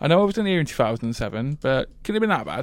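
ordinary delivery

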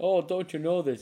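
very loud, high, put-on Canadian accent. Joking around in conversation, slipping into a Canadian accent. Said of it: "Was that really your best Canadian accent?".

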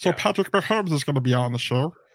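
terrible put-on froggy voice. Announcing an upcoming guest, doing a Patrick Mahomes frog voice. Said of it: "And that's the frog voice".

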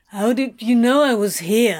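put-on slurred, drunken speech. Reading a story aloud, the narrator voices the demon answering the visitor, slurred, drunk. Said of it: "Slurred the demon".

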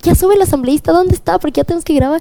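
acted, high, rushed, frantic and desperate voice. Recounting an assistant meeting them before a recording: imitating a desperate assistant. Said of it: "así desesperado".

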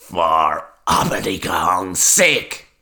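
cackling, cackled-out outburst. A woman answers a youth who spaced out history training, cackling. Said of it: "cackled the woman".

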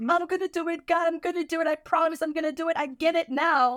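mock sobbing, high, all-out tearful screaming. Retelling a promise made at church: imitating screaming while crying. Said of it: "screaming on top of my".

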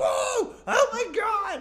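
high, loud crowd shouting in awe. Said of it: "the crowd's like".

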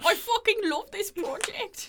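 very high, loud, shrill fake Irish accent. Repeating a guessed quote from a man about the project: put-on Irish accent. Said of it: "He's not Irish".

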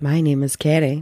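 deep, low-pitched voice. Introducing themselves by name to listeners, deep voice. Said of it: "I sound so deep today".

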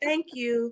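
as polite as possible, extra courteous. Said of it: "with the most polite voice".

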